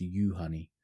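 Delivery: first syllable you stressed. Explaining how a first name is pronounced, stress on the first syllable. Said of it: "the emphasis is on the first syllable".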